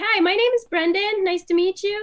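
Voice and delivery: put-on high-pitched boyish voice.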